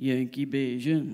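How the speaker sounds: imitated muttering under breath. Retelling what the taxi driver said: imitating muttering under his breath. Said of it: "I hear the driver say under his breath".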